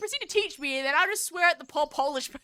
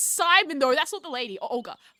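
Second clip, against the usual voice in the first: ordinary talk, nothing marked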